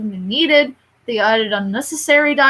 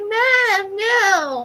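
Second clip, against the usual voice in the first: higher put-on little kid voice; 9 semitones higher than usual. Retelling the remake's scene, imitating Simba like a little kid. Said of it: "a little kid".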